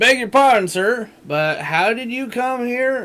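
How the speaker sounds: exaggerated Southern accent. Reading a game character's dialogue aloud: mock Southern accent.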